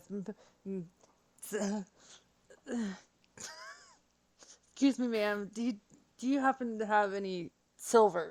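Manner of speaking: soft, stammering, stumbling, tripping over the words. Role-playing a character paying gold for a bag of holding, stuttering and stumbling. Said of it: "Rana stutters and stumbles and says".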